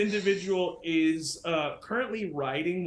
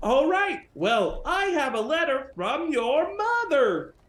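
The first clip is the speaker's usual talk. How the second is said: cowboy character voice; 8 semitones higher, 4 dB louder than usual. Voicing a courier delivering a letter to a player: Cowboy Carl voice. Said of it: "this is the Cowboy Courier Service".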